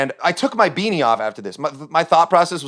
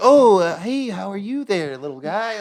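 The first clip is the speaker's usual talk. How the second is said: mock patronizing, condescending talking-down tone; 4 semitones higher than usual. Retelling how people talked down to him, imitating people talking down. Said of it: "They were like talking down to me".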